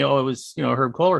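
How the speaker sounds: ordinary talk, nothing marked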